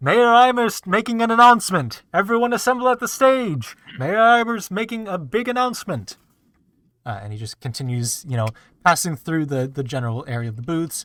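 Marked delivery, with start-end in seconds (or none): 0.0-6.2 very high, loud town crier shout. Voicing a town crier calling everyone to the stage: town crier shouting out. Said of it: "shouting left and right".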